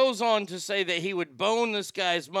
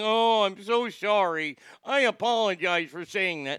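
abject, slow, groveling tone. Mocking a host who apologized for a joke: mock groveling apology. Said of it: "groveling at the feet going".

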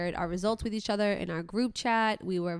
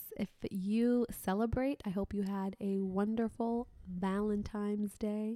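cute little put-on voice, quieter; 6 dB quieter than usual. Addressing the audience after talk of a weekend trip: cute little voice. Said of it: "Why are you talking like that?".

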